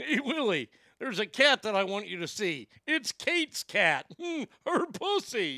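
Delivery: mechanical puppet creature voice. Joking about Willie and Kate, slipping into an automatic ALF voice. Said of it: "I just go into automatic Alf voice".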